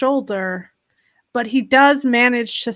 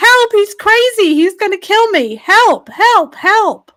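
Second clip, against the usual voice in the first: panicked, frantic, shrill, very high screaming; 9 semitones higher, 8 dB louder than usual. Narrating a scene, voicing a woman banging on the basement door: frantic screaming woman. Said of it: "She's screaming".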